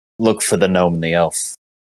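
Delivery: hushed, quiet stage whisper. Describing how he tips her off while walking past: acting out a stage whisper. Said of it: "say it under his breath".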